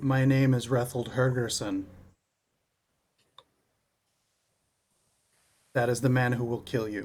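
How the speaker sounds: hushed, half-whispered words. In a tabletop game, a character arm-locks an enemy and speaks to him: half-whispering. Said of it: "I basically whisper to him".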